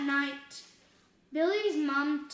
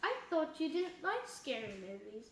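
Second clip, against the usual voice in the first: plain reading voice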